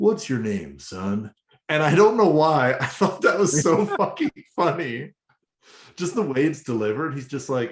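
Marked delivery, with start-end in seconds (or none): 0.0-1.3 smooth, deep, low cowboy voice. Retelling a scene where Primal asks someone's name, Primal smooth cowboy voice. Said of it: "in the weirdest, like smoothest cowboy voice".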